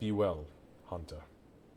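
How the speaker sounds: quiet half-whispered voice. Voicing a character's half-whispered farewell: half-whispering in character. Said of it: "you hear him whisper in Orcish".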